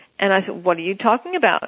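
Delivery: normal talking voice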